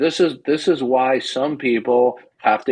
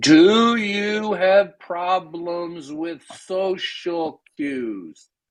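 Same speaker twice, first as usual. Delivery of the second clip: slow, deliberate, pitched-up, drawn out word by word; 5 semitones higher than usual. Repeating his question to the other man, the speaker says it slowly. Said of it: "I'll say it slowly".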